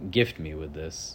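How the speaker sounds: ordinary talk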